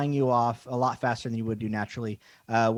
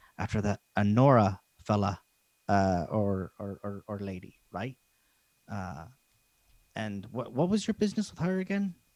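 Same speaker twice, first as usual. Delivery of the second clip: voice brought down a little, slightly quieter; 3 semitones lower than usual. The game character Roland questions the players about their business, Roland lowering his voice. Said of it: "he lowers his voice a little bit".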